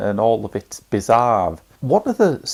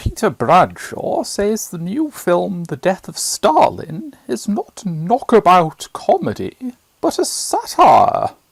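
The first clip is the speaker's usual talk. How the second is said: haughty put-on character voice, pitched high; 7 semitones higher, 3 dB louder than usual. Reading out a letter to The Guardian in Lady Bracknell voice. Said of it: "which I will now read out in the voice of um, Lady Bracknell".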